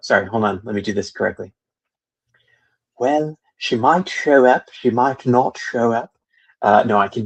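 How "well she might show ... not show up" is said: terrible, clumsy put-on British accent. Retelling what Seb said, attempting a bad Seb British accent. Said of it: "I'm terrible at uh, uh, Seb British accent".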